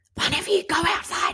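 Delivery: panicked, high hissed yell. Retelling ordering the children outside, retelling a yell-whisper. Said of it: "like yell whispering".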